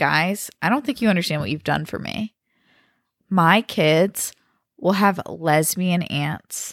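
ordinary talk

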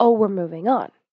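ordinary talk

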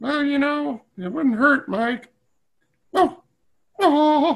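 very high, slow, drawn-out, hurt puppet voice. Speaking as the puppet Mister Giggles after feeling discouraged: Mister Giggles puppet voice, hurt. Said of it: "hurt Mister Giggles' feelings".

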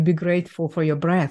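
normal talking voice

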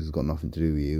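normal talking voice

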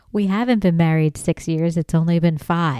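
usual speaking voice

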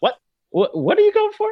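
mock-baffled squeal, high-pitched and loud.

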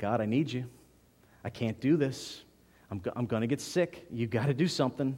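quiet words muttered under the breath. Retelling a prayer said while feeling sick: retelling words said under breath. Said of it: "I'm under my breath".

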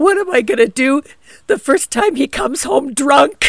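talking through tears, high and weepy. Retelling crying when someone asked what was wrong, imitating own crying. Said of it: "And I'm crying".

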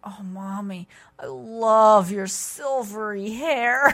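high, very slow, dopey, woozy, stoned drawl. Retelling what a daughter said after wisdom teeth surgery: imitating someone stoned on anesthesia. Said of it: "still quite stoned on the anesthesia".

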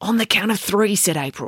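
ordinary delivery

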